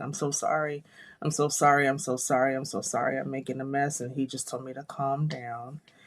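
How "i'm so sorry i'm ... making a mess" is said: mock-frantic, repeated delivery. Recalling going into labor, apologizing over and over to an ex-husband, retelling a frantic apology. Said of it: "running around frantically saying".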